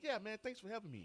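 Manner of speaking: open voice, pitched way up.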